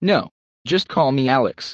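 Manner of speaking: ordinary delivery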